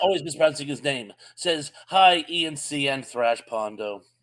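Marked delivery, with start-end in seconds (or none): none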